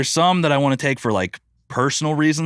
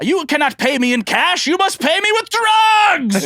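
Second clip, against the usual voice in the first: very high, rising scream, words stretched out; 4 dB louder than usual. Retelling a skit line of a jousting rider: imitating Brandon DiCamillo screaming. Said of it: "screaming, he goes".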